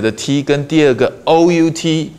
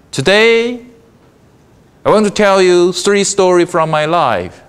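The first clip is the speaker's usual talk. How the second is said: today, then a held, dead stop pause; 3 semitones higher than usual. Copying Steve Jobs's presentation style, pause after 'Today'. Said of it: "he paused".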